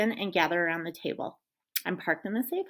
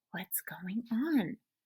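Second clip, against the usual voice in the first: ordinary delivery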